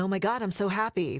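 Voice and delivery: fake, unconvincing happy tone read flatly. Showing how a happy line sounds when just read: unauthentic happy read. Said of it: "it sounds unauthentic".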